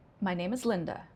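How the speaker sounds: statement tune with pitch falling at end. Demonstrating intonation patterns, saying a simple statement with falling statement intonation. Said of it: "Falling statement".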